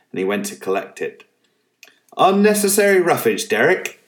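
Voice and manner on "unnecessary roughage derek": very high, loud yelled shout. Picking up the ball, the narrator's brother shouts at Derek: shouting. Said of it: "he shouted".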